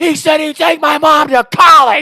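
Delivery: piercing, very loud, very high, drawn-out scream. Retelling a player shouting to the ref: imitating someone screaming. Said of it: "he's screaming".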